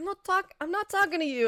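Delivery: put-on New York accent. Retelling a moment where a woman snaps at someone, doing an exaggerated imitation of how she sounded, in a put-on New York accent. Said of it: "sounded very New York".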